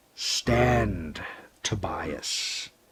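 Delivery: low, deep, hissed voice. A hooded figure orders the narrator to stand, deep hissing voice. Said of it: "a deep voice hissed from the figure".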